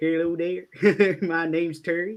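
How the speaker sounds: put-on Texas accent. Voicing a T-Rex named Terry who greets everyone: Texas accent as Terry the T-Rex. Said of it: "I only do a Texas accent when I've got my T-Rex out".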